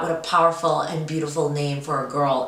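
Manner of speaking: plain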